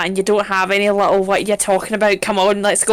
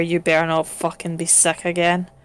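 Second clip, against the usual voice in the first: hushed, threatening, close half-whispered stage whisper; 3 semitones lower, 5 dB quieter than usual. Voicing a character who half-whispers in a horse's ear: half-whispering in his ear. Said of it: "I'm just gonna whisper in his ear".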